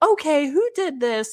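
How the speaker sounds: really upset, high voice. Retelling a teacher reading initials scratched into a pot: imitating an upset teacher. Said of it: "really upset".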